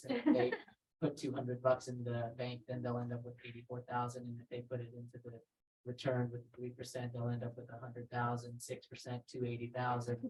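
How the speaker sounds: very low, very quiet, flat droning monotone. Showing how a presenter without inflection sounds, monotone delivery. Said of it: "Do you talk about compound interest like this?".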